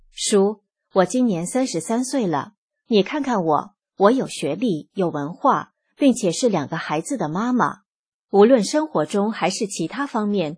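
ordinary delivery

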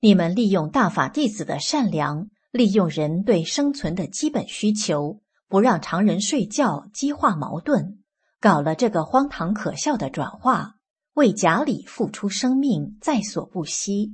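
ordinary talk, nothing marked

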